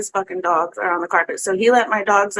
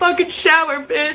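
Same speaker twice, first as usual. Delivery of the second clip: play-acted high, yelled shouting; 8 semitones higher than usual. Retelling what he yelled while the speaker's head was bleeding: imitating someone yelling. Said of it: "he's still yelling at me".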